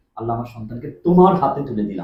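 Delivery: plain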